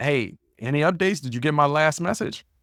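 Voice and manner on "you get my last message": ordinary talk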